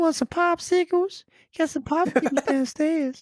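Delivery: very high-pitched, creepy, sleazy cartoon voice. Saying who a voice sounds like, then doing Herbert from Family Guy voice. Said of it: "It sounds like Herbert the pervert from Family Guy".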